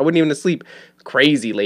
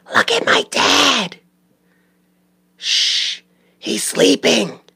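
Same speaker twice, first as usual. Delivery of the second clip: very slow, loud, clumsy stage whisper; 9 semitones higher than usual. Retelling kids sneaking into a bedroom: imitating a kid's loud whisper. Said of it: "but loud whisper 'cause kids don't know how to whisper".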